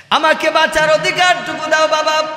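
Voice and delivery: crying, pleading shout.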